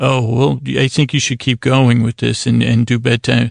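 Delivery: ordinary delivery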